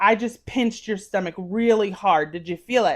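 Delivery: ordinary delivery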